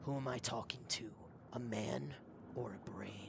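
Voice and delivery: low, hushed, gruff and menacing voice. Trying out a character voice for Bjorn: lowered, gruff and menacing. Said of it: "lower the voice a bit, have it a little bit gruff and menacing".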